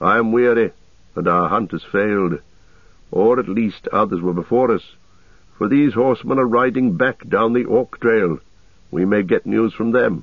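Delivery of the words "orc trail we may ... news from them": ordinary delivery, nothing marked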